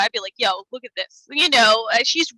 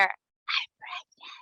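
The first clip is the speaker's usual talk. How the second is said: very close, breathy whisper; 9 dB quieter than usual. Retelling a film scene where she whispers in his ear: imitating a whisper. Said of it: "whispers in his ear".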